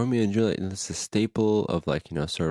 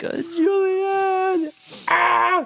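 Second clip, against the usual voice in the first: mock crying, higher and louder; 5 dB louder than usual. Retelling how Romeo acts in the play: imitating Romeo crying. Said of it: "then he's, like, crying".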